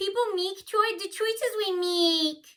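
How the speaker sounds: put-on very high, loud yell like a little kid. Recounting a girl who got annoyed at you: imitating a childish yell. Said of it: "she started yelling like a little kid".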